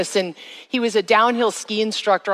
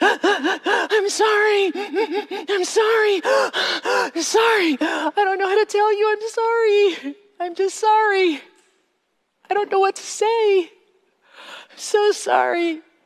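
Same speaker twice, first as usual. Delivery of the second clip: put-on choking, sobbing crying, higher pitch; 12 semitones higher than usual. Retelling a crying woman's repeated apology: imitating choking, crying apology. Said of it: "crying so hard that she sounded like she was choking".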